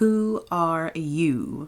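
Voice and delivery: drowsy, languid, lazy, sleepy drawl. The Caterpillar breaks a long silence to address the girl, in a languid, sleepy voice. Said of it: "addressed her in a languid, sleepy voice".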